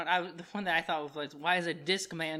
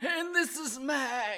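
odd, pitched-up put-on old-man voice; 8 semitones higher than usual. A co-host introduces himself as the two return: weird put-on old-man voice. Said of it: "What is that voice?".

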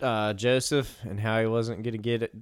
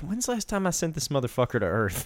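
exasperated outburst, voice swooping and swinging all over; 4 semitones higher than usual. Retelling God slapping his forehead: exasperated God voice. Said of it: "God's up there, like, slapping his forehead".

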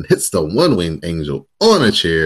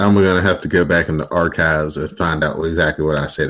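ordinary delivery

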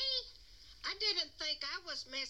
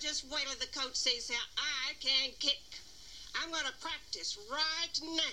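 put-on jock voice, Southern American accent; 4 semitones lower than usual. Voicing Billy, the jock character, in a Southern American accent. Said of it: "What accent's that?".

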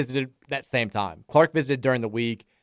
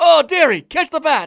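put-on very high, loud Irish accent, drawn out; 8 dB louder than usual. Retelling a funny video of a bat chase: imitating Irish boy narrating. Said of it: "old Irish guy trying to catch a bat, and his, like, young son is narrating".

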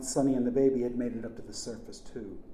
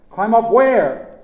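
very loud, very high yelling; 10 semitones higher, 17 dB louder than usual. Over deafening rushing water, a character answers the narrator: shouting back. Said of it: "Chick shouted back".

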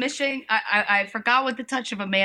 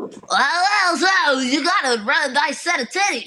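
goofy put-on voice, high silly yell, stretched opening; 7 semitones higher, 4 dB louder than usual. Speaker reenacts filming at 2 a.m., yelling in a silly voice. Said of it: "I'm just yelling into the camera in different voices".

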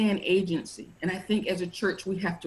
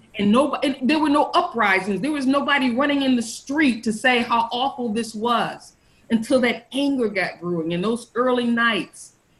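loud, passionate, impassioned raised voice; 4 semitones higher, 5 dB louder than usual. Speaker making a point, getting loud. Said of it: "I'm getting loud".

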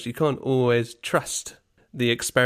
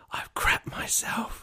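imitated whisper, quieter. Retelling what was said to someone among school kids: retelling a whisper. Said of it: "I sort of just whispered to her".

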